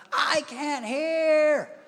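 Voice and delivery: put-on very high, drawn-out whiny child voice. Explaining that kids whine and complain, acting out a child: imitating a whiny child. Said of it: "all they're going to do is whine and complain".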